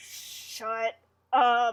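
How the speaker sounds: put-on creepy voice. Retelling how Rick tells Joey to shut up, in Rick's creepiest voice. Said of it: "he tells him to shut up in like the creepiest like voice".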